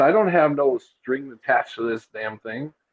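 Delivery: plain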